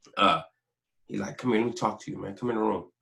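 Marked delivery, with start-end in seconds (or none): 1.4-2.8 real calm, quiet, big-brotherly tone. Retelling what the big brother said at the door: imitating a calm voice. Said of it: "his voice was real calm".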